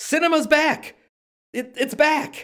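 shouted outburst. Speaker recalls finishing watching a film trailer, retelling a shout. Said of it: "I finished watching it and I shouted".

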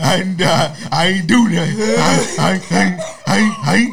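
stammering, repeating I. Acting out being questioned after an arrest: pretend stuttering. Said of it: "I'm gonna be in that bitch stuttering".

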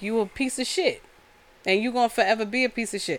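ordinary talk

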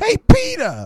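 very high, loud, belted-out delivery. Retelling an imagined movie scene as Aunt May: Marisa Tomei impression. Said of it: "My Marissa Tomei impression is really good".

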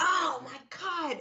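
very high, animated, excited outburst. Speaker retells a student's reaction in class: imitating an excited blurt. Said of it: "he like blurts out and gets really like animated".

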